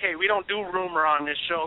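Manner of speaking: ordinary talk, nothing marked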